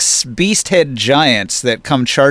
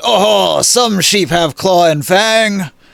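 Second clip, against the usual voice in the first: put-on rhino-headed giant voice, higher-pitched; 6 semitones higher than usual. Narrating a scene where two giants speak, voicing the rhinoceros-headed giant. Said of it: "the other giant has like a rhinoceros head, and he says".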